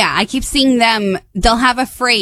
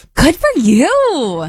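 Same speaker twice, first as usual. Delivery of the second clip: acted encouraging, supportive tone, higher pitch; 5 semitones higher than usual. Saying the phrase on request: put-on supportive tone. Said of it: "be supportive".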